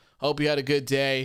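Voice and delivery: ordinary talk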